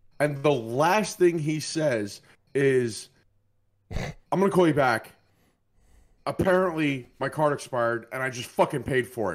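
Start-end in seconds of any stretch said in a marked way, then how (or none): 3.9-9.4 put-on exasperated, frustrated, fast, hurried delivery. Retelling someone's last words on the phone from a checkout line, imitating a frustrated voice. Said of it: "I can hear the frustration in his voice".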